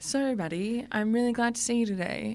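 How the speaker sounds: flat, dead-level monotone, no inflection. Showing how it would sound to talk without putting on voices, flat monotone. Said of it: "imagine if we just spoke in monotone the whole time like this".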